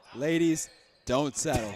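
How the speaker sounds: acted cool, calm, collected, low nonchalant delivery. A commentator mimics the unbothered basketball head coach: imitating a nonchalant coach. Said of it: "cool, calm, collected".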